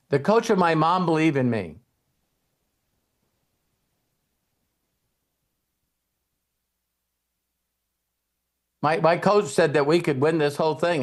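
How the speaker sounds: acted, misty-eyed, teary, emotional, stumbling over my. Retelling a Heisman winner's interview answer, imitating him getting misty-eyed. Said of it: "he gets a little misty in his eyes".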